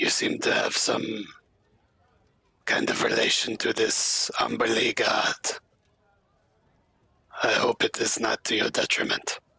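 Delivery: hushed under-breath whisper. Keeping pace with a companion at the back, whispered under breath. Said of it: "under his breath, uh, whisper".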